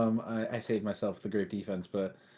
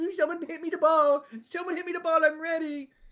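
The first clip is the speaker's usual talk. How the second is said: very high, eager, begging call; 3 dB louder than usual. Retelling a player waiting at midfield, mocking imitation of a player begging for the ball. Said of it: "he's just sitting there circling midfield going".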